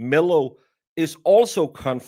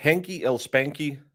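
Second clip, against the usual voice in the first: ordinary talk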